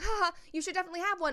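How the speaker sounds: high, nervous laughter through the words. Commenting on a celebrity interview clip; imitating nervous laughter. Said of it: "She's literally nervously laughing".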